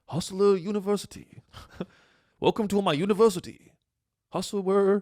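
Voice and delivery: put-on Chinese accent, pitched high. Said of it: "one word is not doing the voice".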